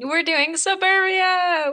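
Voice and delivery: high, slow, hyped announcer delivery.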